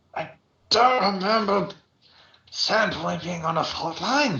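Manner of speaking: put-on, badly hungover voice. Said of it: "a very hungover Aldern Foxglove stumbles".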